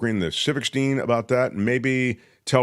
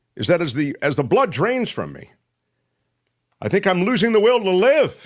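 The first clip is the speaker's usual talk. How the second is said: raised voice, higher and louder; 8 semitones higher, 4 dB louder than usual. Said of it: "Why are you yelling?".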